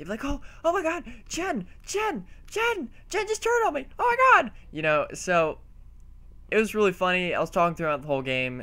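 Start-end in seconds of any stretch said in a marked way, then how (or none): 0.2-4.5 mock, slow, very high, drawn-out wailing shriek. Telling about an online game, mimicking the opponents they kept killing: imitating players screaming. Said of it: "they would just scream at the top of their lungs".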